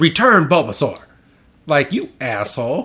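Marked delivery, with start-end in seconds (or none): 0.0-1.0 growling, order-like delivery. Retelling a cartoon scene, quoting Ash: imitating Ash growling. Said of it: "literally growls and says".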